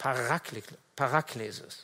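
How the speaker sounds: Paraklesis, stressed on ra syllable. Explaining a Greek word and where its stress falls: stress on second a of Paraklesis. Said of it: "Also die Betonung liegt auf dem zweiten A".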